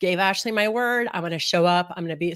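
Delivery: ordinary talk, nothing marked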